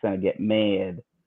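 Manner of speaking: attempted Chicago accent. Hosts on a stream trying a phrase in an attempted Chicago accent. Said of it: "attempt at a, a as a at a Chicago accent".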